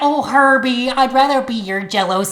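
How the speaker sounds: put-on lifted, high-pitched Midwest accent. Playing Julie, answering Herbie, in a Midwest accent. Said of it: "I will be doing Julie in a Midwest accent".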